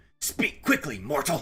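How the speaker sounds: high-pitched, loud, haughty, imperious barking voice. Recalling what Golden Saints say when you walk past: imitating Golden Saints' haughty line. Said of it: "the Golden Saints would be like".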